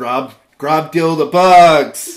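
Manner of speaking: garbled, mangled blurted shout. Acting out a character who randomly blurts out orders: garbled blurted shout. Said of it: "I made it sound more like".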